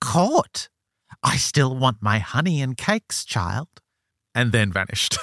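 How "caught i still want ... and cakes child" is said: odd, strange, slow house brownie voice. Retelling a story, the speaker voices the creature answering them: strange creature voice. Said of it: "says in this strange voice".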